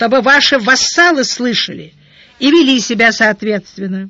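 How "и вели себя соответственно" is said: ordinary delivery, nothing marked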